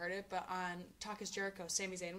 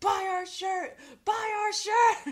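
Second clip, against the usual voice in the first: booming, very loud, very high, stretched-out shouting; 12 semitones higher, 15 dB louder than usual. Retelling how he held up his shirt: imitating someone yelling. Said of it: "just started yelling".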